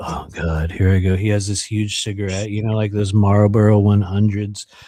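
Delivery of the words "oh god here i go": tired, jaded, world-weary, resigned alien voice. Acting out a gray alien smoking on a ship: jaded gray alien voice. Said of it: "He's super jaded".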